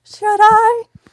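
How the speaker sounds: very high, very loud, cracking puberty squeak. Retelling a reply to a doctor's question: imitating own high-pitched voice. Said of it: "You know when your voice goes high, like you're going through puberty?".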